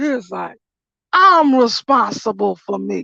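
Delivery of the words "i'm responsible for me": mock firm, powerful, slow, forceful delivery. Retelling how a man suddenly answered, imitating a strong forceful voice. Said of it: "this strong ass voice".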